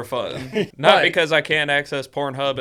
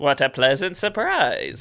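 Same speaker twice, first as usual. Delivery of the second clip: swooping, animated-film professor character voice. Podcast co-host mimics a film's professor, in a Nightmare Before Christmas professor voice. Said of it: "Sound like the professor guy in uh, Nightmare Before Christmas. He's like".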